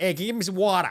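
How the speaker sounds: put-on Philadelphia accent. Voicing a creature asking for water in a Philly accent. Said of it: "It's a Philly accent".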